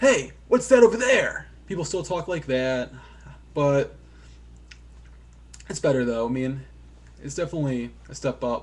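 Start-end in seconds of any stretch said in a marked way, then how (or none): 0.0-1.5 bad, high, loud overacted voice acting. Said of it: "bad voice acting is still there".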